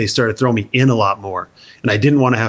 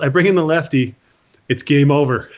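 flat, emotionless put-on voice, higher pitched; 4 semitones higher than usual. Retelling what the manager said at the batting cage: imitating Jim Leyland, deadpan. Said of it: "dead, straight face, no emotion whatsoever".

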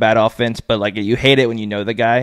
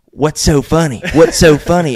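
put-on country accent, higher pitch; 5 semitones higher, 5 dB louder than usual. Retelling what he asked the laughing players on the sideline, his country accent. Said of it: "in his country accent".

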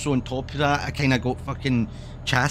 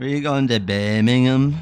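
put-on louder Scouse accent; 5 dB louder than usual. Speaker saying where they're headed, suddenly in a Scouse accent. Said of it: "I said Birmingham in a Scouse accent".

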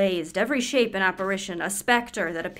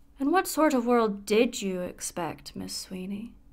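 mock frosty, chilling, very icy, cold tone. Retelling a remark Mister Royce once made: very icy voice imitating Mister Royce. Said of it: "he said in a very icy voice".

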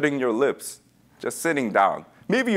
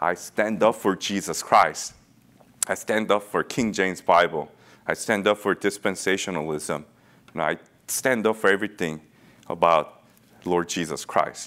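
plain

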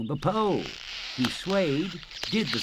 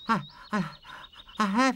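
stammering, much higher pitch; 8 semitones higher than usual. Narrator reading Steve's reply when Stan asks what's the matter, stammering. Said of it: "stammered Steve".

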